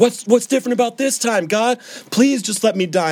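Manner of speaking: very high, broken, crying, desperate wail. Retelling a moment alone in a car, crying out to God: imitating her own screaming. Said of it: "So I start screaming at him in this car".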